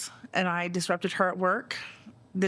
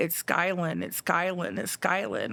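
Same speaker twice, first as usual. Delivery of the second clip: plain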